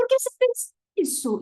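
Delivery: very high-pitched, heated, rising tone. Demonstrating how voices sound when people argue: agitated, rising, high-pitched. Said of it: "a tendência é a gente aumentar o tom de voz e usar inflexões ascendentes... Eu tô forçando aqui, só para vocês entenderem".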